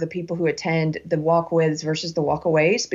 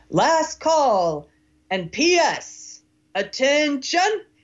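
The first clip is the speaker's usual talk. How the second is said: mock barked military-style shout, high pitched; 8 semitones higher than usual. Retelling an older man in a loud bar calling for attention, in a military-style shout. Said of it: "he just shouts in this military style voice".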